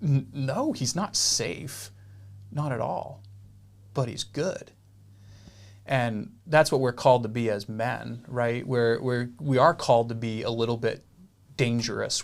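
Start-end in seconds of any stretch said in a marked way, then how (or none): 0.0-4.7 put-on shocked voice, quieter. Retelling a story to a group, voicing Mr. Beaver's reply as if in shock. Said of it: "like almost in shock".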